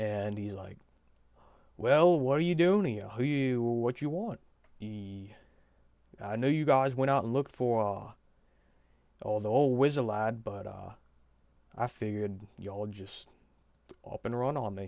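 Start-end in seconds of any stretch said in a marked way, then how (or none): 1.8-14.9 put-on orc character voice. Game master voices the orc clerk speaking to the party, in a put-on orc voice. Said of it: "orc good. I voice, / and the figure tilts his head up a little bit, / Bro, [name], you gave him like the most jockey for like his first couple words, the most jockey sounding voice ever".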